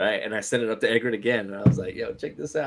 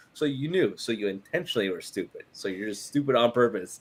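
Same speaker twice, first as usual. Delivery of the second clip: ordinary delivery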